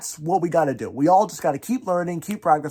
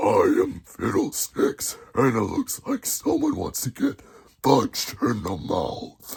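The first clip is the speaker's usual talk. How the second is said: deep, low, worked-on put-on character voice; 6 semitones lower than usual. Teaching how to do a difficult voice, demonstrating the put-on voice. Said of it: "you'll be able to be like".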